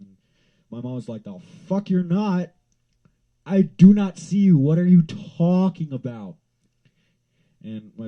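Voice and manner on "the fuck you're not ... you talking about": screaming, very high, shrill and very loud. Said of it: "screaming at me".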